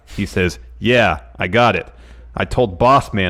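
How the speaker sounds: ordinary talk, nothing marked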